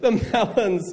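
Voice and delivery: high-pitched, laughing read-aloud. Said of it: "I can't even read this without laughing".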